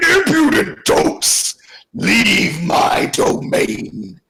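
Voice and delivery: very slow, drawn-out, bellowing dragon beast voice. Voicing the huge beast as it confronts the group in the clearing, bellowing dragon voice. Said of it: "it bellows out".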